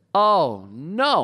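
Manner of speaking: put-on sudden, loud, high, stricken cry of dismay. Retelling reading an email with bad news alone in the study: retelling a loud cry. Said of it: "I said it really loud".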